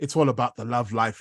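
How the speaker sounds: ordinary talk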